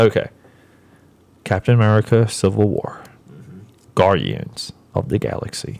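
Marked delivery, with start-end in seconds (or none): 1.4-5.8 low, sultry, sexy put-on voice. Wrapping up by listing movie titles, in a sexy voice. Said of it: "I'm doing this in my sexy voice".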